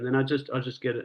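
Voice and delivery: normal talking voice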